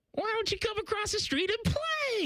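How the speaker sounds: very high, creepy and mischievous squirrel voice. Voicing the squirrel character Squirrely, Squirrely voice, sounding predatory. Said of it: "that sounded predatory".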